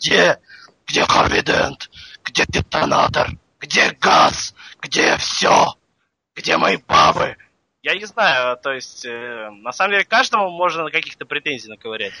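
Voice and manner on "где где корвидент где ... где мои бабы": put-on yell, slow and demanding. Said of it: "бьет их и кричит".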